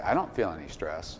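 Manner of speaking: plain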